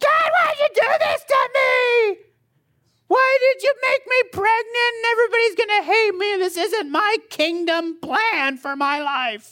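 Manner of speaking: shrill, very high-pitched yelling outcry. Contrasting Mary's submission, the speaker acts out her complaining to God, yelling as Mary. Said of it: "I'm going to yell, so get ready for it".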